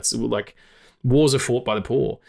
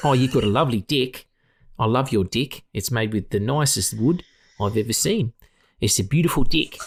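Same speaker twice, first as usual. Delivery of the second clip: put-on New Zealand accent. Voicing Saruman as if he were from New Zealand: Saruman in a New Zealand accent. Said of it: "he'd be from New Zealand, wouldn't he?".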